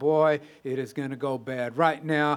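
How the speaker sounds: usual speaking voice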